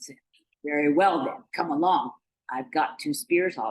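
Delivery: ordinary delivery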